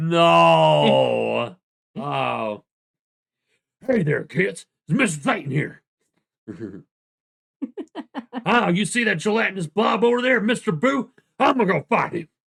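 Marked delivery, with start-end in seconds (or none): 3.9-12.2 loud, high-pitched, big cartoon hero voice. Aspiring voice actor practicing an impression, Mister Titan impression. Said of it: "You let let me know how that impression was".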